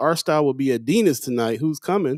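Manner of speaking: ordinary talk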